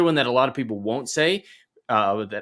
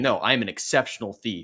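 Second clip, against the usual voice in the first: mock sharp, snapping tone. Retelling how the thief answers Holly: imitating a snapping retort. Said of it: "when he snaps at Molly".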